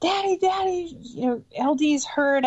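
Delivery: mock panicked, high, frantic scream. Recalling running inside to their dad after someone got hurt: retelling a scream. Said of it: "screaming at my dad".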